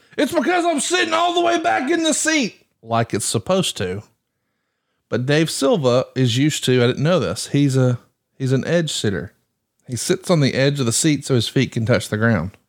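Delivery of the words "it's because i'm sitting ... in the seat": mock, very high, shouted yelling. Retelling how he reacted after being teased, retelling a yell. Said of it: "And then he yelled".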